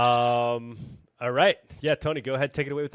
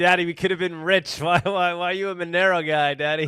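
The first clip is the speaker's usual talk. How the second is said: put-on high, loud, pissed-off, pleading kid voice; 6 semitones higher, 6 dB louder than usual. Imitating an upset daughter complaining about missing riches: imitating his pissed-off daughter. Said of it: "she's all pissed off. She's like".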